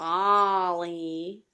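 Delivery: low, drawn-out robot voice. Doing impressions of movie robots for the audience: WALL-E impression. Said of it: "I'll just do my Wally and Eve impressions".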